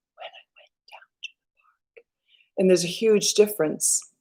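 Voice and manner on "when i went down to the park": true whisper, very quiet, barely any sound. Showing how a kid should really whisper when told to: whispering. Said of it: "No, whisper".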